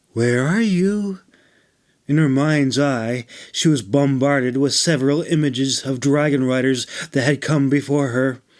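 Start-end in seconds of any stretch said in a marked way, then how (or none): 0.2-1.2 calming, gentle, soothing voice, gently pitched up. A woman leans forward and calls out into the dragon's dream realm, in a soft, soothing voice. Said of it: "called in a soft, soothing voice".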